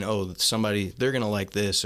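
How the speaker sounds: usual speaking voice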